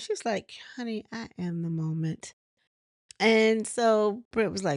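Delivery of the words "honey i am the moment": put-on nice calm tone, lower and quieter. Retelling a reality show argument, quoting a cast member: imitating Kenya's nice calm tone. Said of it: "just so nice and calm".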